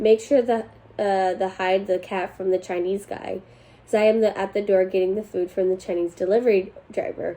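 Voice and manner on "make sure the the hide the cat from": plain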